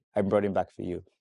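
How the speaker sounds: ordinary talk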